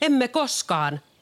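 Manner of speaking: high shout, many voices yelling as one. The pigs answer the wolf calling them to come out, shouted in unison. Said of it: "huusivat possut yhteen ääneen".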